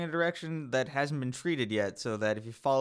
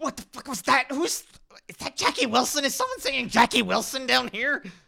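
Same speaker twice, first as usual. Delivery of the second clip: very high, loud snarling voice; 12 semitones higher, 6 dB louder than usual. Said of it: "speaking in a snarling sort of language".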